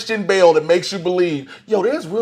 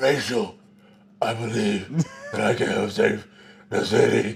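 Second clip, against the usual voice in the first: put-on crazy insane voice, lower and quieter; 9 semitones lower, 7 dB quieter than usual. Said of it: "that crazy, insane voice he's doing".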